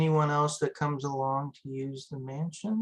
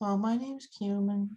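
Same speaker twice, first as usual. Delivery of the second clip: put-on shy, timid, high, level monotone little-kid voice; 7 semitones higher than usual. Trying out a voice that is asked its name: Cumin's timid child voice. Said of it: "it's like a very timid child speaking to you".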